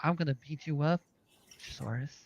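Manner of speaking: gently soothing, hushed, near-whispered voice. Retelling what another man said, acting it out in a very soothing voice. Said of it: "said it like in a very soothing voice".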